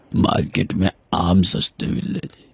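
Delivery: put-on elderly man voice.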